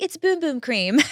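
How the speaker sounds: put-on casual Australian accent. Retelling a woman in the gym answering her question, in an Australian accent. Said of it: "she has an Australian accent".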